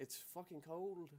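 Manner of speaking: put-on soft, high, babyish little-girl Scottish accent. Speaker retelling a meme of a little scottish girl filmed by her mom, scottish baby voice. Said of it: "baby voice and she has like that Scotland accent".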